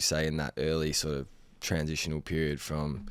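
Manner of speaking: ordinary talk, nothing marked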